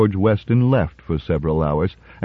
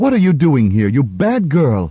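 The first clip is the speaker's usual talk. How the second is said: high cry, fear turning to angry scolding; 5 semitones higher than usual. Mrs. Weston finds her runaway daughter, anxiety turning to anger, angry cry. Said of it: "cried Mrs. Weston, anxiety dissolving at once into anger".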